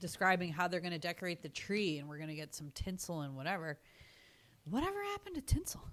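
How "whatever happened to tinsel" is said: high, fast, whispered character voice. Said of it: "you know, Ernest is saying".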